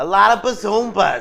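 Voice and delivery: very loud, very slow, belted delivery stretching every word. Told to say it like Joan Rivers, giving a Joan Rivers impression. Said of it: "say it like Joan Rivers".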